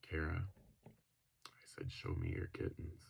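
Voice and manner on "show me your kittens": hushed, very quiet whispering. Speaker retells what they said to someone, very quietly: retelling a very quiet line. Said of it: "I very quietly said".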